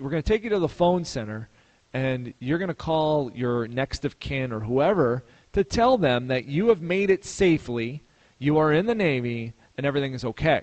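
ordinary talk, nothing marked

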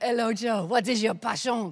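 put-on French accent, put on and laid on thick. Retelling a French guy's first words to her on being introduced: French accent. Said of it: "excuse my French accent".

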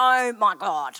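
very loud, blurted exclamation. Retelling a child's sudden outburst at a cafe, retelling a very loud exclamation. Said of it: "in a very loud voice".

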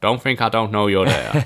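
very calculated delivery with gravitas. Retelling a TV scene's closing line said into a mirror: calculated Frank Underwood voice. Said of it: "in that very calculated under, uh, Frank Underwood voice".

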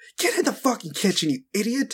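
high, abusive head-chef shouting. Game master voices Neil Gordon Ramsay, the head chef, to a player: yelling abusively.

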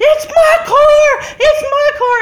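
very slow, high, loud, drawn-out crying scream. Retelling a girl running toward the crash: imitating a girl screaming. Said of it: "they're screaming and crying".

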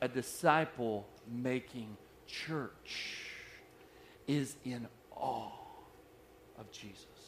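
drawn-out, near-whispered, breathy, slow, hushed, deliberate. A speaker repeats the point to the church, said slowly. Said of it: "I'm going to say that slow".

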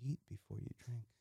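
hushed, barely audible. Retelling advice given to a guest who asked for a beer recommendation, lowered voice. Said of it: "in a lower tone volume".

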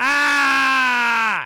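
sudden high, loud scream. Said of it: "Sorry, I didn't mean to scream".

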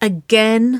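very loud, high protesting cry. Waverley, told the babies must have their kiss, answering her sister: protesting. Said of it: "She protested".

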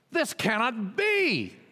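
loud, high-pitched yell. Narrator reads the stepmother objecting to the prince's choice; yelling. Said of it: "yelled the stepmother".

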